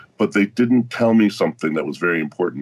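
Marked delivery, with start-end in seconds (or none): none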